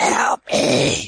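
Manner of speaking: quacking cartoon duck voice. Doing a voice after the others ask for one: Donald Duck voice. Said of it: "You're the only one who can do a Donald impression".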